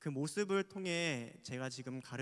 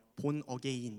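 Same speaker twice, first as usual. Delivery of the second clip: English with Korean pronunciation. Reading the sermon title aloud in Korean-accented English. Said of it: "제가 본토 발음으로 한번 읽어드릴게요. ... 제 본토는 대한민국입니다".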